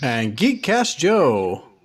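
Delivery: forceful, booming announcer voice. Announcing own name at the start of the episode: loud, forceful announcement. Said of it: "very loud and very forceful".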